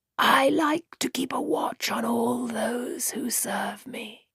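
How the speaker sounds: soft, dry, rustling snake-like voice. A narrator voices the halfman speaking to one who serves it, like a snake rustling through dead leaves. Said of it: "Its voice sounded like a snake rustling through dead leaves".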